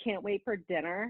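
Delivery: imitated nasty, mean girl voice. Retelling how the inner mean girl voice spoke, imitating a nasty mean girl. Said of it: "the mean girl, like, shows up and she's like".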